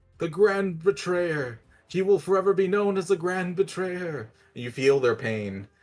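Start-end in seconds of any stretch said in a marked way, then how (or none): 0.2-4.3 eerie screaming chorus, higher and louder. Voicing plant spores heard through a spell, screaming words. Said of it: "spores are just screaming out".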